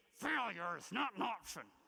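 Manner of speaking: gritted-teeth delivery. Showing how a famous saying about failure is supposed to be said, through gritted teeth. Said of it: "you're really supposed to say it through gritted teeth".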